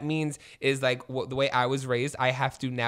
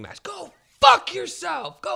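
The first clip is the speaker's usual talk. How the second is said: very high, raw, rough screaming outburst; 5 dB louder than usual. Recalling being told to calm down, the speaker reenacts their own screaming. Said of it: "And I was like screaming".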